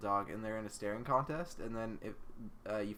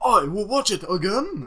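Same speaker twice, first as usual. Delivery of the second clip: put-on very high, very loud, shrill old man voice, Japanese accent; 11 semitones higher, 16 dB louder than usual. Repeating the line, the speaker yells it in an old Japanese man voice. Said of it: "Old Japanese dude".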